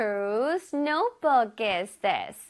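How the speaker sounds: very slow, careful, deliberate delivery. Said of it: "문장에서 볼게요".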